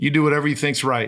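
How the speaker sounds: mock flat deadpan delivery. Retelling a man's answer to his question, imitating a deadpan reply. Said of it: "he looked at me with a deadpan and he goes".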